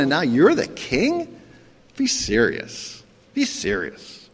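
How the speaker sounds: slow, scornful, sarcastic mocking ridicule. Acting out Pilate questioning a bound prisoner: Pilate's sarcastic ridicule. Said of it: "This is ridicule".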